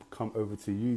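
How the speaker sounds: ordinary delivery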